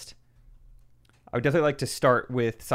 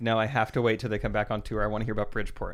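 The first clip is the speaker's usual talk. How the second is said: ordinary talk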